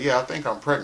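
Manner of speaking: ordinary talk, nothing marked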